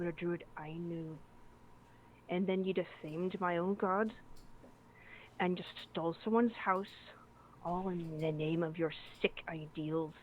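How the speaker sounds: very quiet. A player voices her character holding a dagger to a captive's throat, very quietly. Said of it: "very quietly just like brings it up to his throat".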